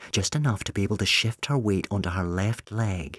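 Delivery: ordinary delivery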